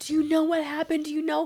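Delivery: high, tearful, upset crying voice. Retelling her mom and sister walking in after her overdose, imitating someone crying. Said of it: "they're crying and they're crying".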